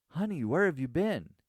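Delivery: very high-pitched, loud, frantic, panicky voice. Reading a story where a man rushes up to a woman: panicky voice. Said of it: "he asks in a panicky voice".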